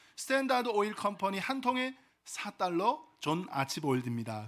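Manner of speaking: ordinary talk, nothing marked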